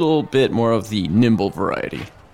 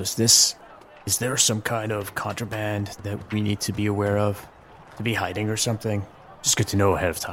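hushed, lowered voice; 6 dB quieter than usual. After the captain seemed angry, the speaker asks a question; lowered voice. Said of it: "I kind of lower my voice and say".

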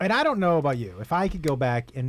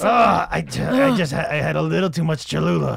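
put-on groaning gravelly voice, louder; 2 semitones higher, 5 dB louder than usual. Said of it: "He sounds like he's got, he has some stomach problems".

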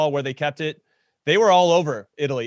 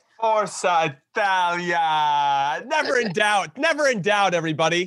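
very slow megaphone announcer call, Italia stretched; 2 semitones higher than usual. Co-host celebrates italy's win on a soccer podcast, megaphone voice. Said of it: "Jimmy Conrad and his megaphone".

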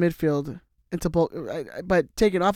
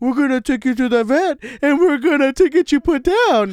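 very high, loud, happy, cheerful voice; 9 semitones higher, 7 dB louder than usual. Showing how people tell dogs bad news, happy voice used for dogs. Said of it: "It's like when you talk to a dog".

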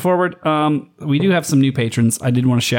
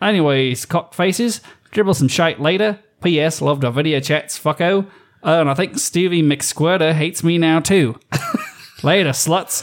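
put-on Australian accent; 3 semitones higher than usual. Reading out an Aussie's message, in a put-on Australian accent. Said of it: "I only have one Australian accent apparently".

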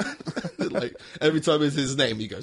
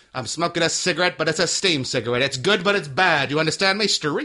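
put-on 1950s gangster voice; 3 semitones higher, 4 dB louder than usual. Acting out a made-up scene of a tough figure giving condescending praise: Meryl Streep as 1950s gangster. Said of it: "She's like a nineteen fifties gangster".

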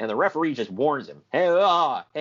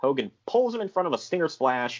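plain

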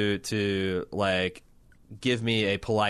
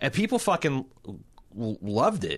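usual speaking voice

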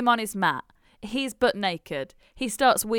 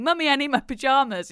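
put-on screaming child voice; 4 semitones higher than usual. Retelling a story about a mother and her boy: retelling a child's scream. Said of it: "he's screaming".

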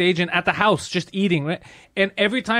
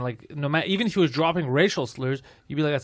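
plain

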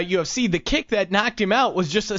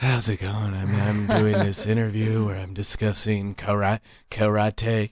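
creepy, breathy put-on voice, lower pitch; 11 semitones lower than usual. Mocking an interviewee's creepy breath: Steven Seagal breathy exhale voice. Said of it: "he speaks entirely in exhales".

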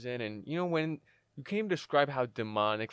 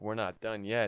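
put-on demonic, possessed-sounding voice. Retelling a dream where the younger brother came in possessed, demonic possessed voice. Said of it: "he's all demonic and possessed".

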